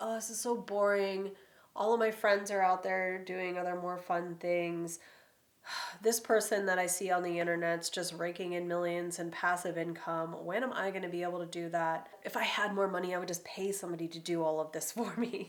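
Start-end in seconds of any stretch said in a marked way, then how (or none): none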